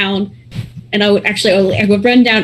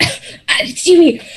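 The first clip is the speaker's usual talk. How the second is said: high, gasping, out of breath. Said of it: "I'm, like, very out of breath".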